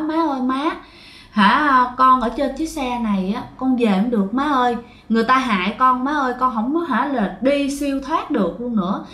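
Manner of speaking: plain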